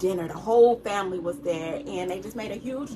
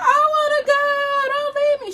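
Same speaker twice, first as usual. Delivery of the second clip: put-on very high, tearful, drawn-out crying plea; 8 dB louder than usual. Retelling begging at the airport not to be left behind: imitating own past crying. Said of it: "And I just break down crying".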